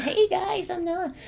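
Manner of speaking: put-on tiny, very high, soft little-kid voice. Recounting an audition tape sent in for casting, the speaker does a little kid's voice. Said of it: "I did like the little kid's voice too".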